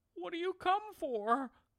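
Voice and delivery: tiny scared voice, very high pitched. A narrator reads her question to the gangling man who stopped dancing: small voice. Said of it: "she asked in a small voice and shivered and shook".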